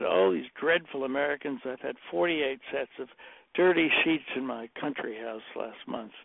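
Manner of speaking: ordinary talk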